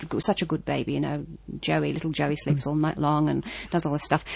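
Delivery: normal talking voice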